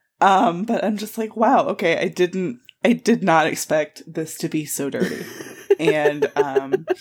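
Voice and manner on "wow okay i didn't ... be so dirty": ordinary delivery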